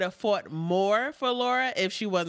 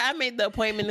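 normal talking voice

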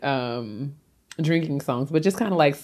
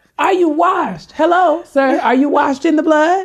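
shrill, very loud, high-pitched screaming at full volume; 13 semitones higher, 8 dB louder than usual. Retelling what a man by the highway kept saying, imitating a man screaming. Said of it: "he was screaming".

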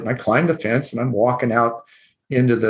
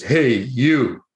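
mock big-voiced, booming call. Retelling a night waiting on the porch as a child, big booming voice. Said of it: "I hear this big booming voice".

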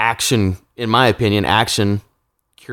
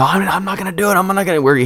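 put-on mimicked child scream, higher, slower; 10 semitones higher than usual. A dad retells his kid screaming at him in the line, retelling a kid's screaming. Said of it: "he's screaming at me".

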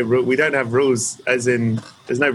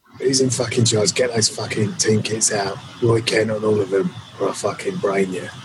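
gruff, growling, put-on tough-guy voice. Doing a voicemail greeting in a gruff growling put-on voice. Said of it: "You got to do your voice".

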